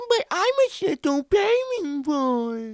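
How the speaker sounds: put-on very high, loud, slow babyish squeak. Describing a man doing impressions, the speaker mimics his Adam Sandler baby voice impression. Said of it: "he's like doing the Adam Sandler like".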